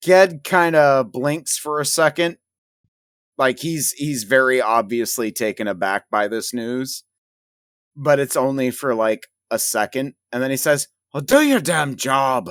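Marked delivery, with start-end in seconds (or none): 11.1-12.5 put-on spoken in a Scottish accent. Narrator voicing Ged as he looks at Graves and replies, Ged with Scottish accent. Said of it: "I keep trying to give Ged a Scottish accent".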